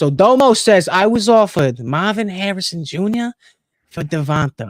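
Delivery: put-on Italian accent. Reading someone's message aloud to a co-host: Italian accent. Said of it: "Let me read this in the Italian accent".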